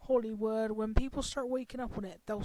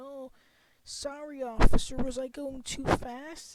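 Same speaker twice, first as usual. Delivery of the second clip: slow, begging, apologetic pleading tone; 3 semitones higher, 6 dB louder than usual. Mocking drivers pulled over by police: imitating someone pleading. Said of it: "Why are you begging and pleading".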